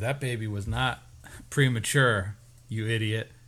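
ordinary delivery

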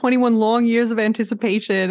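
usual speaking voice

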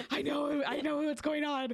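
high, excited, out-of-character voice. Retelling what they said to the dragon: imitating own excited out-of-character line. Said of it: "I got so excited".

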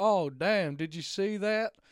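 slow put-on American drawl. Retelling a hunter's reaction after a deer shot: imitating an American hunter. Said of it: "he quite sounded quite that much like Hank".

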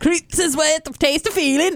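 put-on Swedish accent. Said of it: "Sounded like the Swedish chef".

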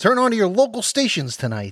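put-on very high old-time radio announcer voice. Asked what they were going for, the speaker does an old-time radio announcer voice. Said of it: "Old-time radio guy".

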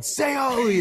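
insistent, high-pitched yelling by a group. Retelling a group at a conference urging the speaker, imitating people yelling. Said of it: "they all start yelling".

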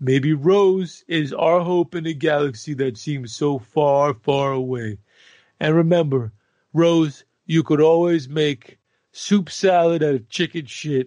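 loud, mock-heartfelt, fake-earnest voice.

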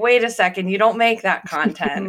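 ordinary talk

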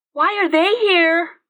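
frightened, very high voice. A blonde-haired girl asks as the Seekers let loose, in a scared voice. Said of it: "asked in a scared voice".

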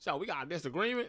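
put-on Oakland accent. Quoting what he said after the disagreement, in a put-on Oakland accent. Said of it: "he sounds mad Oakland".

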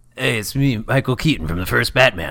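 very cool, laid-back, relaxed delivery. Answering a request to say it cooler: cool voice as Michael Keaton. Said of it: "Can you say it, like, a little cooler?".

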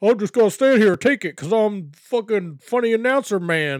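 put-on Alabama accent. Act out the announcer being yelled at by El Ligero after a match, Jim Smallman impression, Alabama accent. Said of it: "why he has an Alabama accent".

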